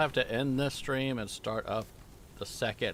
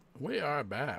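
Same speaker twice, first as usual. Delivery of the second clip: talking with food in mouth. Coming back to the stream after a break, talking with mouth full. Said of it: "I got a little food in my mouth".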